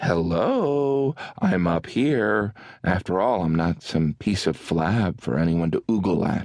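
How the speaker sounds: very condescending, acted, with "hello" long and drawn out. A performer tells how he answers women staring at his gut, mock-condescending tone. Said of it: "say in a very condescending tone".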